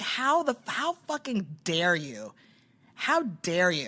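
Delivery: enraged, indignant, furious outburst with swooping pitch. Retelling a fight with another woman, imitating her own furious words. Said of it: "I was so fucking mad".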